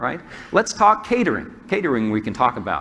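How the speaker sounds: ordinary talk, nothing marked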